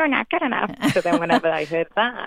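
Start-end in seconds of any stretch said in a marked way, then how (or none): 0.0-0.7 squeaked out at a very high pitch. Showing how therapy changed a negative inner voice: Mickey Mouse voice. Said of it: "changed it into this Mickey Mouse sounding voice".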